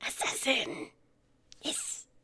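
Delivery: very quiet, eager, excited, breathy hushed whisper. Roleplaying a character who finds a chandelier broken on purpose: excited whisper. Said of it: "just sort of whisper excitedly".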